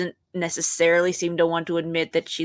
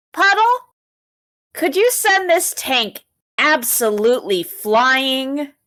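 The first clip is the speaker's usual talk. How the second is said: loud, high-pitched shout; 8 semitones higher, 5 dB louder than usual. Voicing a character who calls to an ally to throw a tank: yelling in character. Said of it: "she yells".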